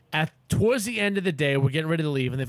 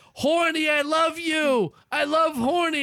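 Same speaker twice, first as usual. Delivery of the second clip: put-on very high, shrill, drawn-out children's hollering; 13 semitones higher than usual. Parent telling about the kids at the zoo, voicing them: imitating kids yelling.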